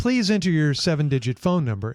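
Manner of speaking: recorded, automated phone-menu machine voice. Retelling a call to customer service, imitating an automated phone voice. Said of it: "you get the automated voice".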